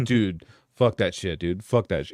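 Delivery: play-acted mad, pissed-off angry outburst. Recounting finding a roommate wrapped in blankets, imitating an angry rant. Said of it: "He was like fucking pissed".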